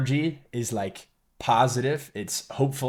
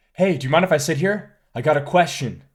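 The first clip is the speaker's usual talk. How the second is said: play-acted tense, uncomfortable, slightly aggressive, on-edge voice; 4 semitones higher, 4 dB louder than usual. Critiquing a man's approach line, the speaker imitates him sounding uncomfortable. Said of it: "he's coming off just sounding uncomfortable".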